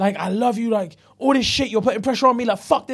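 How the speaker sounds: mock-angry outburst in an acted angry man's voice. Speaker retells a couple's argument, acting out the man's side, imitating an angry man. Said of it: "he was getting angry in there".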